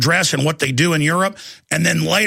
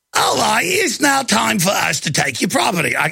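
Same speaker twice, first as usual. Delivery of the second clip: odd put-on Cockney accent, high and swooping; 5 semitones higher than usual. Trying an Australian accent, it comes out as a weird Cockney accent. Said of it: "That's more of a weird Cockney accent".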